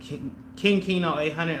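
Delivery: stutter on King. Recommending a clothing brand mentor from a recent episode, the speaker stutters over words. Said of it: "I'm stuttering over words".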